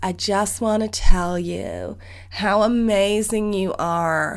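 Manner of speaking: slow, put-on American accent. Imitating what a teacher would say during the opener, imitated American accent. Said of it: "I'm going to do an impression of her right now".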